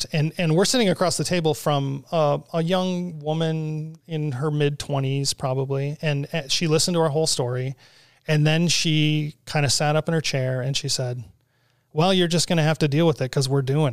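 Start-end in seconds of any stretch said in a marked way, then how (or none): 11.9-13.9 cold, flat, level, unmoved delivery. Retelling what a young woman across the meeting table said: imitating a flat, cold tone. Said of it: "in the most, like, flat and cold way".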